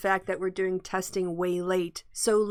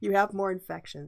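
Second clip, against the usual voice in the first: put-on muttering under the breath. Retelling an interviewer's aside: imitating words muttered under breath. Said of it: "Just under his breath".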